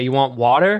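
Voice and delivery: strong American accent. Showing how words are said to a daughter: super American accent. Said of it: "the ones that I go super American on".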